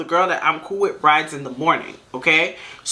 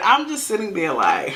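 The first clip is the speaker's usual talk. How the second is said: ordinary talk, nothing marked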